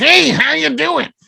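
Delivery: very high-pitched, creaky voice. Retelling meeting someone at an airport: Louie Anderson impression. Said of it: "a very distinct voice".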